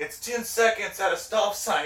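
hollered lecturing yell. From the back seat, retelling what he yelled at the old guy: retelling a yell. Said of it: "He's like yelling like the rules of the road".

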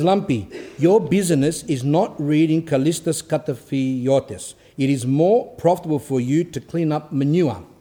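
ordinary delivery

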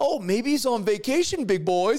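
mock scornful, sneering, mocking jeer. Retelling the story of a prophet taunting rivals: imitating Elijah mocking. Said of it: "he stands over there mocking".

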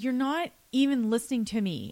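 mock aggrieved, upset, high-pitched outburst. Retelling a son's complaint to his sister: imitating an upset complaint. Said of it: "he was getting really upset".

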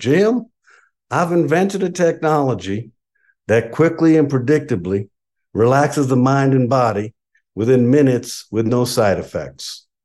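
easy, relaxed drawl from the American South. Quote the neuroscientist who contacted your consulting firm, in Dr. G. Blake Holloway's nice southern drawl. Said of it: "with a nice southern drawl".

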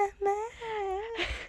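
put-on very high, soft crying whine.

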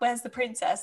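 badly done, put-on Italian accent. Quoting a film character with a confusing accent: bad Paolo Puttanesca accent. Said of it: "Such a bad accent".

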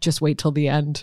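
ordinary talk

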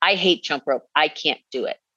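put-on snarky tone. Retelling what was said to a workout partner one day: retelling a snarky remark. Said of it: "I was in a snarky attitude".

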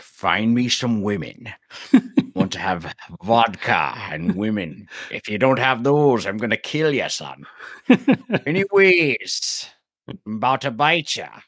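put-on dragon voice, Scottish accent. Describing a show, the speaker quotes its dragon in a Scottish dragon voice. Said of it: "the dragon had a Scottish accent".

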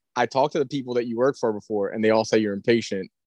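ordinary talk

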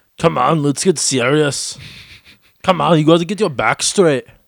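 loud, high, barked gym-coach pep-talk voice. Doing an Arnold impression when asked by the other speaker: Arnold Schwarzenegger impression. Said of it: "Do your best Arnold impression".

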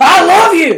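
very loud, shrill, very high-pitched holler. Describing a loud family house, imitating someone hollering. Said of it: "They could be hollering and be hollering nice things".

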